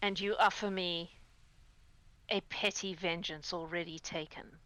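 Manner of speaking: deep, cold voice. Voicing a being heard inside light and thunder: deep, cold voice. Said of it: "you hear a deep, cold voice".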